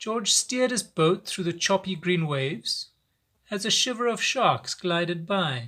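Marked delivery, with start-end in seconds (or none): none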